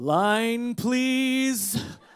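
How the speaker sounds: very loud, grand biblical boom, line drawn out. Retelling a frozen actor finally asking for his line, in a booming Noah-like voice. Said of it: "he says with his most booming, Noah-like voice".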